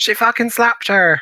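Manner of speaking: put-on very high-pitched rural Hampshire farmer accent. Joking about how a phrase sounds, in a Hampshire farmer impression. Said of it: "my Hampshire farmer impression".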